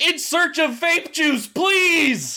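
very high, slow, drawn-out full-volume shout. Reading a post aloud to the others, shouting a post in all caps. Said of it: "I'm gonna shout this because it's in all caps".

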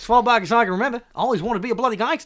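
put-on Australian accent. Doing an australian gangster-film parody, narrating in an australian accent. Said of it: "Australian gangsters".

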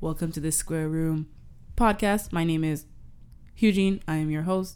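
flat, low, quiet delivery. Teasing the host about his podcast intro, doing Eugene's slight monotone with odd pauses. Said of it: "odd placement of pauses mixed with slight monotoneness".

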